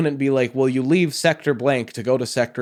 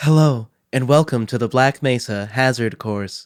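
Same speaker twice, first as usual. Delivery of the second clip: put-on sultry female announcer voice. Asked to imitate a game's holographic assistant, sultry female assistant voice. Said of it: "I started a little too sultry".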